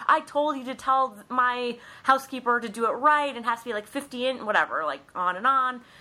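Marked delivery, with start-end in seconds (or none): 0.0-4.4 high, ranting, demanding put-on screaming tirade. Retelling a character screaming at her assistant: imitating someone screaming. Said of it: "screaming about the slippers".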